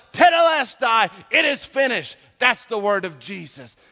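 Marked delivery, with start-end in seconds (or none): 0.1-2.1 high, loud yell. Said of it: "he yells out".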